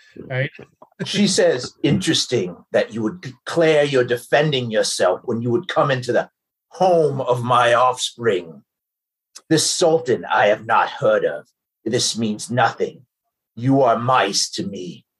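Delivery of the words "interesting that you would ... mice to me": put-on deep, low, old dragon voice. Voicing the dragon mother answering the intruders' claim of self-defence, booming dragon mother voice.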